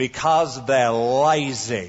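lazy, stretched-out, drawn-out Southern drawl. Retelling a radio interview answer: J. Vernon McGee southern drawl. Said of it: "He said in that southern drawl".

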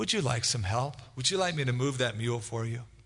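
very soothing, calm, gentle reassuring voice. Telling a story, voicing a passing friend speaking to the struggling farmer, retelling a soothing, calm voice. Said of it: "in a very soothing, calm voice".

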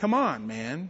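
mock sarcastic tone. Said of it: "his response was very sarcastic".

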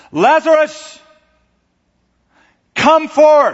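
very loud, high, full-voiced shout. Explaining a scripture passage, acting out the cry it describes: retelling a loud shout. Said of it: "It was a shout".

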